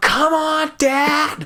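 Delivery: very high-pitched, urging yell. Retelling a race where pushing dad to hurry: imitating yelling at dad. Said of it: "yelling at my".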